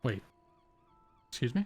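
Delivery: bewildered, puzzled, confused delivery. A character reacts to someone announcing they are leaving, confused. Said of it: "He seems kind of confused".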